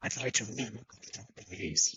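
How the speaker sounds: put-on, low, sinister, menacing murderer voice. Acting out a phone call to a call centre: put-on murderer voice. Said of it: "You sound like a murderer".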